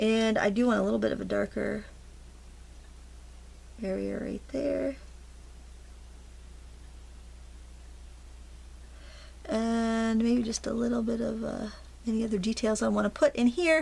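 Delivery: murmured, mumbled, continuous low running talk. Talking through painting details of a bird's beak, mumbling. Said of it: "Sorry if I'm mumbling".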